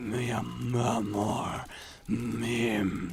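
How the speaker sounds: deep seductive Spanish-style voice. Showing the voice that goes with a guitar strum: deep, almost Spanish sexy voice. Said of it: "my attempt at, like, a sexy voice".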